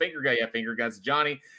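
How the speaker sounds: usual speaking voice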